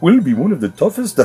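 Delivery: put-on Indian accent. Speaker reading out a health service chief executive's quote, in an indian accent. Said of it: "am I doing Indian accent?".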